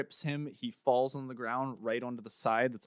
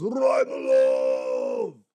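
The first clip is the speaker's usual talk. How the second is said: very loud, high, gleeful cry; 8 semitones higher, 10 dB louder than usual. A narrator tells of a man raising both arms after a bout: gleeful cry. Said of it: "puts both of his arms up in glee and says".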